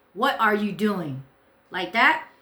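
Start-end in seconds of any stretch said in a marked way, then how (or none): 0.2-1.2 mock strong, forceful, commanding voice. Retelling confronting a stranger in a kitchen: imitating own strong commanding voice. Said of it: "this strong, uh, voice to her".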